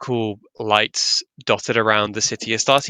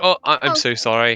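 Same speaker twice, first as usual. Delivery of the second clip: awkward, flustered, apologetic shopkeeper voice. Voicing a shopkeeper who touched a player's hand with mayo: awkward apologetic shopkeeper voice. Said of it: "And he's like".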